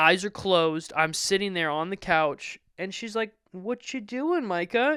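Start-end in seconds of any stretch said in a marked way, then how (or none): 3.5-5.0 mock terrified, uneasy voice, pitched high. Retelling how the mom asked a question: imitating someone terrified. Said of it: "She's terrified".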